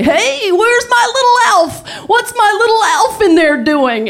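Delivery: put-on very high, drunken yelling bellow. Telling a story, the speaker acts out a man coming home: imitating Daddy Warbucks' drunken bellow. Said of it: "starts yelling drunkenly, bellowing down the hallway".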